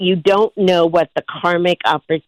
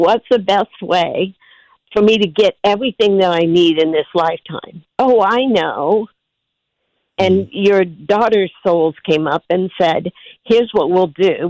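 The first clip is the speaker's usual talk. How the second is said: emotional, voice welling up. Telling a listener about her daughters' souls, getting emotional. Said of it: "So I'm gonna get emotional".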